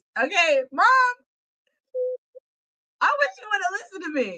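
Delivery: high, fake-tearful, near-crying acted voice. Addressing Mom about a high school party night: mock tearful voice. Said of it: "In my tearful voice".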